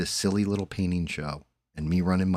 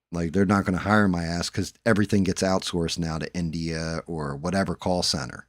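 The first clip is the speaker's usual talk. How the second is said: plain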